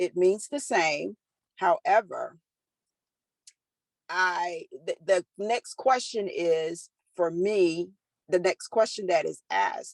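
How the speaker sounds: plain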